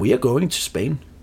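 put-on English with a Danish accent. Retelling a flight attendant's answer on a plane: imitating an English-Danish accent. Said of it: "med en engelsk-dansk accent".

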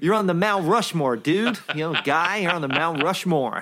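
attempted, would-be American accent. Trying out a phrase he hears all the time, in an attempted American accent. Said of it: "Was that Welsh?".

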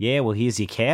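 put-on Australian-accented speech. Picturing a line from Muldoon: Muldoon in Australian accent. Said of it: "That's my Australian accent".

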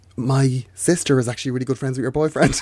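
whispering. Retelling what a girl on stage whispered to the speaker: imitating someone whispering. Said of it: "then she whispered to me".

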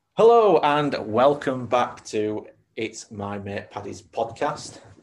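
bright, upbeat, really cheerful, swooping voice. Opening the podcast and welcoming listeners back, really cheerful. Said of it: "I suddenly sounded really cheerful".

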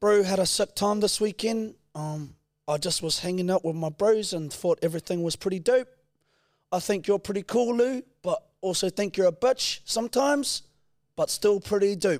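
very high, casual Kiwi bro New Zealand accent. Doing a requested New Zealand accent for the other speaker: New Zealand accent. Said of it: "You do your best New Zealand accent".

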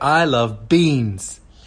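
very slow, drawn-out speech, every word stretched.

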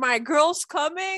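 all-out delighted screaming, high and full-on. Retelling the end of an episode: imitating own screaming. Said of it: "I was full on screaming".

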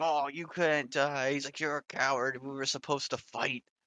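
put-on worked-up, frantic, agitated ranting. Retelling a show scene where a character freaks out: imitating Kuwabara freaking out. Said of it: "fucking freaking out".

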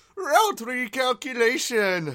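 very high, squeaky, bad cartoon Italian voice. Imagining a GPS that talks like Mario, doing a bad Mario impression. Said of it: "It's like the worst Mario impressions".

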